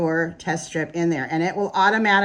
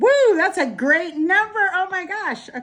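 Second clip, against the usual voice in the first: thrilled, higher; 12 semitones higher than usual. Reading a glucose test result aloud and seeing a great number: excited. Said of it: "sorry, I'm excited".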